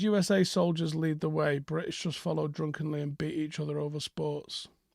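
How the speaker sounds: plain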